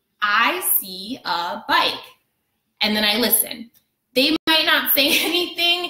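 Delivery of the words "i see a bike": each word drawn out very slowly, deliberate. Talking to someone who doesn't speak english, in a very slow sentence. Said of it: "I say it very slowly".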